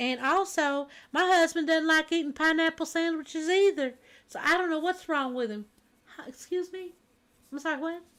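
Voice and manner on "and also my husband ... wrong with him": put-on speaking in an American Southern accent. Retelling what a woman said about her husband: imitating a southern accent. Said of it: "she sounded Southern".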